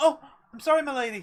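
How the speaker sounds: put-on boyish voice, around twelve. Voicing a boy who bumps into a lady and bows: young boy voice. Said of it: "I would say twelve, thirteen-ish old boy".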